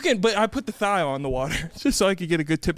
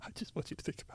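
fake sobbing, quieter and lower; 3 semitones lower, 21 dB quieter than usual. Mimicking the other speaker's tearful plea back at them, in mock crying. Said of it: "Do you need to let something out?".

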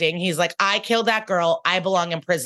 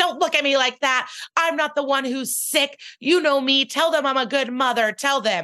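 mock twisting, yelling scream, pitched up; 7 semitones higher than usual. Recapping an episode, speaker quotes a handcuffed mother being led out, imitating her screaming. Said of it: "she's twisting and screaming".

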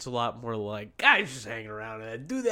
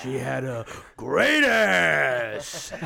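very slow, loud, creaky, rough, stretched-out growling drawl; 6 dB louder than usual. Answering a request for an impression by quoting Heat: Al Pacino impression. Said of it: "That's my Pacino".

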